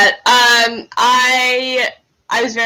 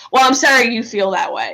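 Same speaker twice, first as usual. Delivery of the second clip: normal talking voice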